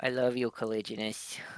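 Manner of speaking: very quiet, soft, hushed, barely audible. Voicing a character's quiet mental message to Cal: very quiet Kekno voice. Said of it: "a very quiet, mental Kekno voice".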